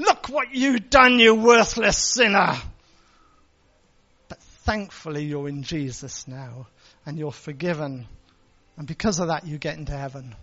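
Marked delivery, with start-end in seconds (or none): 0.0-2.6 very loud, thunderous, booming voice with raised pitch. Describing a common picture of God judging sinners: thunderous voice of God. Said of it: "God saying in a thunderous voice".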